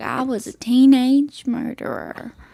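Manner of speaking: slight, light Southern accent. Host repeats the show's title, redoing it in a little Southern accent. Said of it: "It was a little southern".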